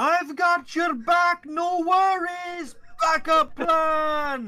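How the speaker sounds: booming, shrill, drawn-out top-of-lungs holler. In the ring, offering backup: yelling at top of lungs. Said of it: "I'm going to yell at the top of my lungs".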